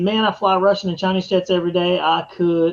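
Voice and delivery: ordinary talk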